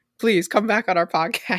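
desperate, pleading voice. Speaker appeals to a man to return to their podcast: desperate. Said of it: "Why do you sound like desperate?".

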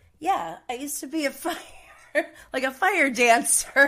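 nonchalant, offhand tone. Retelling what a cast member said out of nowhere: imitating a nonchalant remark.

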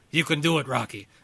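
put-on gruff old boxing trainer voice. Joking that a quote sounds like Mickey: Mickey from Rocky voice. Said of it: "That sounds like Mickey from Rocky".

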